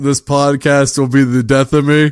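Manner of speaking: ordinary talk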